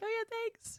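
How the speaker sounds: mock deadpan, flat, emotionless, very high-pitched delivery. Imitating a friend who answers sobbing people: imitating a flat, emotionless reply. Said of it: "other people are sobbing and you're just like".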